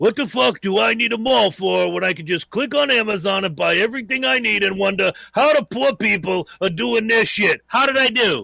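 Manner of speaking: put-on caricature voice, rough, creaky, raspy. Doing an impression of Herm for everyone: Herm impression. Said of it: "I'm gonna do an impression of Herm for all of you".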